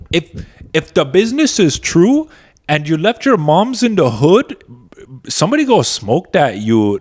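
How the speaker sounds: put-on loud, swooping young female Toronto accent. Talking about the accent show, imitating that Toronto girl. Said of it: "Have you seen that Toronto girl? She's like".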